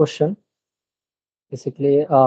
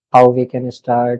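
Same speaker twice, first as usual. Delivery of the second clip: ordinary talk, nothing marked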